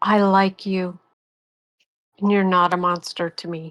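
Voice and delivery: soft whisper. Speaking in character, telling a party member they're no monster: whispering. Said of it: "And Ellie whispers".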